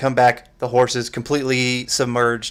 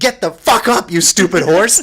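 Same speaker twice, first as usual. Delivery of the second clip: loud, high-pitched fake yell. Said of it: "You are screaming".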